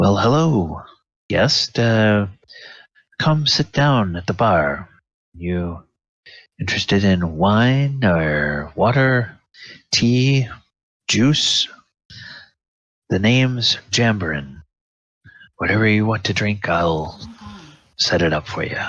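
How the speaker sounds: soft-voiced, soft-spoken manner. Game master voicing the bartender greeting a guest: Jambarin's soft voice. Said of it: "calls in a soft voice".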